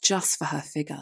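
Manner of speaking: ordinary delivery, nothing marked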